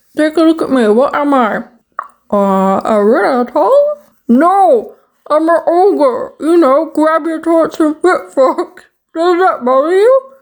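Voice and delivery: talking with water in mouth. Speaker talks to Derek during a water challenge, talking with water in mouth. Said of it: "have water in my mouth".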